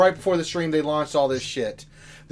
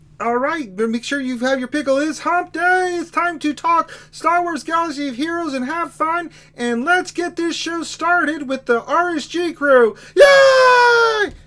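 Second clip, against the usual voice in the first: imitated puppet frog voice; 10 semitones higher than usual. Opening the stream for chat as Kermit the Frog: Kermit the Frog voice. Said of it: "You guys are always asking for Kermit".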